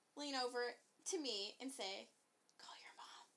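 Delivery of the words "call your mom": whisper, quieter. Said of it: "you whispered".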